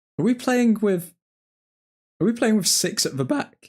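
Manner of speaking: breaking voice, cracking mid-line. Watching a football match with others, asking a question, voice cracking. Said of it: "Voice crack there".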